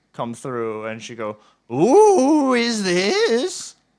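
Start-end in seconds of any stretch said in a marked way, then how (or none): 1.7-3.7 put-on high old woman voice, drawn-out "who". Narrating a door scene, the speaker voices the woman behind it: much older woman's voice. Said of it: "you'll hear a much older woman's voice".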